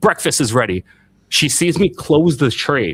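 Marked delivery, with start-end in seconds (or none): 0.0-0.8 angry, fed-up, pissed-off voice. Retelling mom slamming the door to announce breakfast: imitating an angry mom. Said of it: "pissed off, slams the door".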